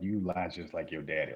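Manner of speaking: usual speaking voice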